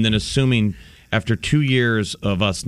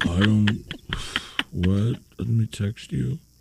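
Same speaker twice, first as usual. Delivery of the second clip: slow, distracted, head-down mumble; 4 dB quieter than usual. Imitating a man looking down at his phone: imitating a mumbler. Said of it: "looking down mumblers on our phones".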